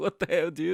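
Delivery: mock panicked voices. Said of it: "And they were all panicking, like".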